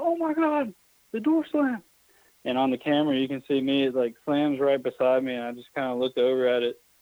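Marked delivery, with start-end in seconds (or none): 0.0-1.8 mock shrill freakout, very high startled scream. Retelling how a friend reacted when a door slammed: imitating someone screaming.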